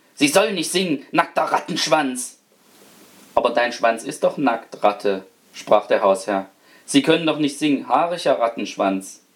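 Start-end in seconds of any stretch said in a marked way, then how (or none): 0.2-2.4 hissed furiously, angry hissing. A rat, questioned angrily by the master of the house, answers, hissed furiously. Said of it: "Da fauchte die Ratte wütend".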